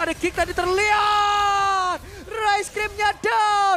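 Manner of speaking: excited play-by-play commentary voice.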